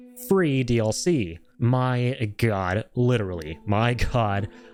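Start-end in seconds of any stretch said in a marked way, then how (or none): 0.2-1.3 strong stress on the word "free". Talking about God of War Ragnarok's free DLC: stress on "free". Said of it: "I'm going to be stressing that word a lot".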